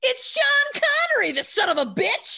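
very high-pitched shouted outburst. Retelling a mother's outburst in a packed movie theater: imitating mother yelling. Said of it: "in the packed movie theater yells".

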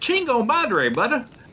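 put-on country accent. Retelling what a man said on walking into a restroom, in a country accent. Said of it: "with a country accent said".

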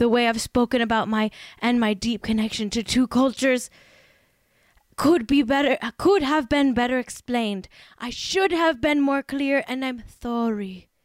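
put-on Spanish accent with a lisp. Reading a posted statement aloud in an impression: Ilaria Baldwin impression. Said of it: "I'm doing an impression of Ilaria Baldwin".

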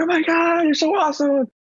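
very high-pitched, effusive gushing voice. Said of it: "she's like".

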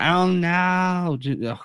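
whiny voice, "oh no" whined. Trying to recall a stand-up bit for a fellow speaker, in a whiny Kevin Hart voice. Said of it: "the whiny like Kevin Hart voice".

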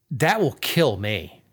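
ordinary delivery

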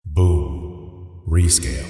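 very low, deep movie trailer announcer voice. Asked by the host to use his trailer voice again, in a movie trailer voice. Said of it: "use your trailer voice".

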